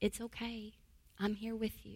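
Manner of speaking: gentle calming voice. Showing how to calm a triggered child or adult: lowered calm voice. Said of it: "I would lower my voice, and I would speak calmly".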